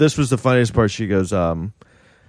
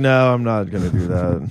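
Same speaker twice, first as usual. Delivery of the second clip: normal talking voice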